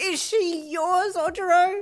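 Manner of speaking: piercing, shrill cry, very high and loud. A voice calls out again from the mist, asking a question in a shrill voice. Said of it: "That same shrill voice called out".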